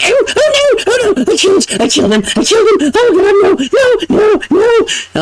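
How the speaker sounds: very high, frantic, drawn-out panic. Voicing the hermit in the game as the gold falls, panicking. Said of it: "you can hear him just panicking".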